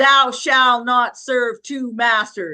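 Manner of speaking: put-on, very stern voice. Retelling a voice heard in the car after a thunderbolt: imitating a very stern voice. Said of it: "not angrily, but a very stern voice said".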